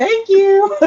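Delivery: very high, overly polite customer service voice. Joking about a voice that cracks them up: customer service voice. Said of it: "The customer service voice".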